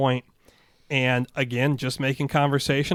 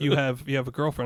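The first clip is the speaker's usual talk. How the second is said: plain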